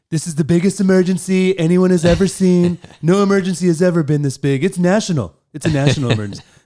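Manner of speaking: loud news announcement. Retelling a president on the news declaring an emergency: Trump impression. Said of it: "Pretty good impression".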